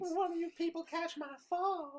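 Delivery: put-on Southern accent. Riffing on the hospital name Mercy Me: put-on Southern accent. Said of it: "the Southern accent you just did".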